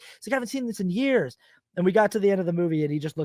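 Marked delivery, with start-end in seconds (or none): 0.3-1.4 put-on excited voice, higher. Retelling how a father reacted to watching an old film: imitating someone excited. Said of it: "he was so excited".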